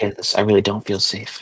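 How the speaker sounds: hushed low voice. Voicing a character who confides her fear: low whisper. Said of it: "her voice drops to a low whisper".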